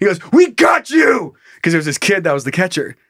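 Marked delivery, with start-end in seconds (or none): 0.3-1.4 acted-out, very high, shrill, loud scream. Retelling how a player's dad screamed at him during a play: imitating a dad screaming. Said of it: "but he was screaming at me".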